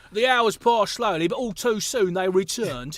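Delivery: put-on cockney accent, storytelling voice. Reading the same narration line again as a joke: Cockney accent. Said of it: "Let's do a Cockney for the".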